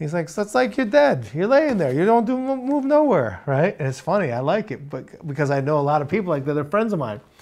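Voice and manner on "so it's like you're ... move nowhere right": put-on high, sing-song, swooping New York accent.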